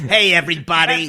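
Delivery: quacking duck character voice.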